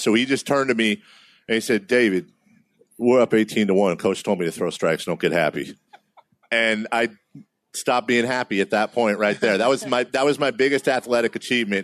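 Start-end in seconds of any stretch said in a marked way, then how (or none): 1.9-5.8 calm, steady, low voice. Recalling what Derek said to him during a game, imitating Derek's low voice. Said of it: "he had a lower voice than any of us".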